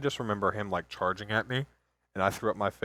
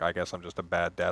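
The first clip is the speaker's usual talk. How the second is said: mock near-tearful, almost crying voice, lower pitch; 4 semitones lower than usual. Retelling what dad said when he came back afterwards: imitating dad almost crying. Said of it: "he came to me almost crying".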